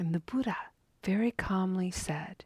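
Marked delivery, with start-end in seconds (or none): none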